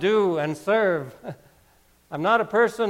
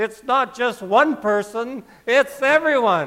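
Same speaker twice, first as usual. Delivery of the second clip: panicked, frantic voice; 4 semitones higher than usual. Retelling what a man said to her on the cell phone, in a panicked voice. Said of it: "in a panicked voice".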